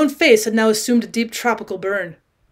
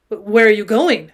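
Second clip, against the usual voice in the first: sudden, alarmed, demanding tone; 3 dB louder than usual. Gatsby, as the narrator gets up to leave, alarmed demand. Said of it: "demanded Gatsby in immediate alarm".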